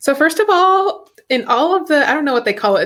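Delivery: worried, high voice cracking, very drawn out. Asked to start the discussion about Katie and Derek, voice cracking, worried. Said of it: "your voice cracked a little bit, like you were worried".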